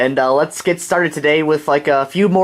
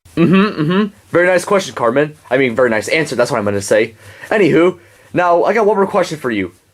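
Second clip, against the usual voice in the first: plain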